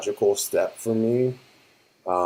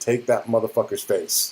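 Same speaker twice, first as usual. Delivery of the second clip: ordinary delivery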